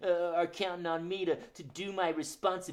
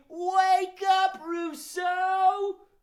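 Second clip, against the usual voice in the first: biggest, loudest yell, pitched way up; 13 semitones higher, 8 dB louder than usual. Leading the audience in waking a sleeping character, a big loud shout. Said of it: "Rousseau the rooster is snoozing".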